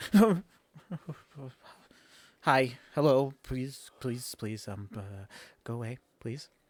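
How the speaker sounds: very loud, shaking, scared, nervous pleading. Voicing a character described as nervous and shaking: nervous and shaking. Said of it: "you see he's nervous and shaking".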